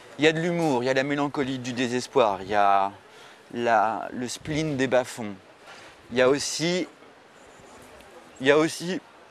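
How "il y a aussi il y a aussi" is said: choking up, voice breaking, words catching. Praising a film, overcome with emotion mid-sentence: choking up. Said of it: "Excusez-moi, je suis ému. Je vais chialer".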